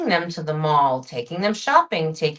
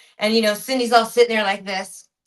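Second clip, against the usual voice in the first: usual speaking voice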